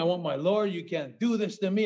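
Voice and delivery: mock screaming, acted-out yell. Recalling being put behind bars in a film scene, retelling a scream. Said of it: "I was screaming".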